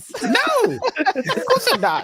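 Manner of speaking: very high squeaky voice, swooping way up. Mimicking a man's reply, going full-on Mickey Mouse voice. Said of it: "going on full on Mickey Mouse".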